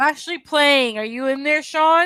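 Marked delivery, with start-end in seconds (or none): 1.0-2.1 called out loud with raised pitch. Calling to someone elsewhere in the house, unaware the mic is on: yelling. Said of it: "so you're yelling at Sean".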